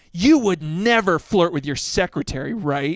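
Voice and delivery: mock-angry, pissed-off outburst. Recounting a woman coming home after a fight with the speaker's dad; imitating her pissed off. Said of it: "she came home pissed off".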